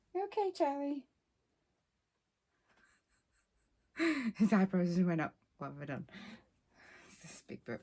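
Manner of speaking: speech mixed with laughter. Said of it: "I'm laughing 'cause the dog just burped".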